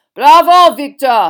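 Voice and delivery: very loud carrying shout. Narrator reads Karkaroff cheering Victor over the applause, booming loud voice. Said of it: "Boomed Karkaroff so loudly".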